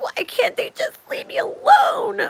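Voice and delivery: breathy, whispered, tearful sobbing. Retelling a man's over-the-top complaint: imitating a man crying. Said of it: "This is a man crying over".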